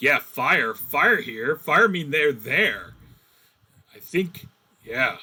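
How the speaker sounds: grunting monster orc voice, calling out. Voicing orcs heard from behind the party: voicing orcs. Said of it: "you hear from behind you".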